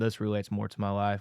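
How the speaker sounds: ordinary talk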